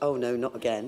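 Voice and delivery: play-acted tired, worn-out voice, low and weary. Mimicking how the other speaker just announced a name: imitating a weary tone. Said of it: "don't say that with such".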